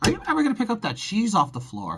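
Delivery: sudden mock barking yell with swooping pitch. Telling a work story, the speaker quotes the boss yelling out: imitating the boss yelling. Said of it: "he just yells out".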